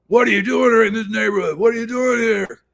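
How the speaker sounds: very high-pitched, hollering yell. Retelling how a guy on the street kept yelling at him: imitating someone yelling. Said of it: "yelling at me and yelling at me".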